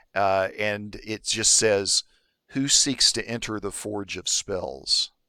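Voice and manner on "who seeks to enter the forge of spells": serene, wise, deep, calm, ancient-sounding voice. Voicing a being that looks at you and speaks, in a deep, calm, ancient voice. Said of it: "speaks in this deep voice that sounds, it's very calm and sounds very wise and ancient".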